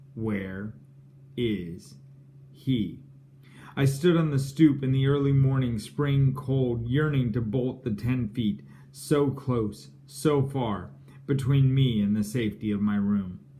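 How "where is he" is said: mock quiet, flat deadpan menace, each word evenly weighted. Recalling mother opening the door at dawn, retelling her deadpan words. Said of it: "deadpan, each word equally weighted".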